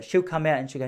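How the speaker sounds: ordinary talk, nothing marked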